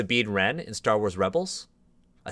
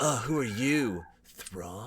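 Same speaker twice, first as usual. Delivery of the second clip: put-on surfer voice, much quieter; 6 dB quieter than usual. Mocking a story's portrayal of Anakin meeting Thrawn, in a Surfer Anakin voice. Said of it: "it's like Surfer Anakin".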